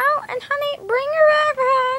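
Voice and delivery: strange, very high, affected put-on voice. A mother on the phone with her child, in a strange put-on voice. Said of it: "Mom, why are you talking like that?".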